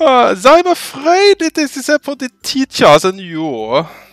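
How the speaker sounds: embarrassed. She replies to someone who wants a Russian accent for everyone, embarrassed. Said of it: "She says, embarrassed".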